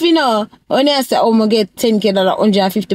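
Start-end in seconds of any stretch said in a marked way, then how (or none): none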